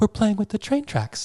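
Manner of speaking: put-on very high little kid voice. Retelling what Rocky said when the door opened, imitating Rocky's little voice. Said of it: "in his little voice that he does".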